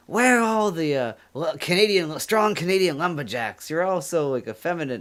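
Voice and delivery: teasing. The speaker retells how an American friend teases Canadians, imitating Bill's teasing. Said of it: "he always busts our balls".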